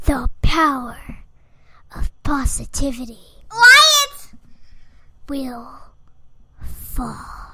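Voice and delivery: low, eerie, sinister, creepy voice. Predicting the winner when asked who she likes: creepy voice. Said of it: "she's doing some sort of creepy voice".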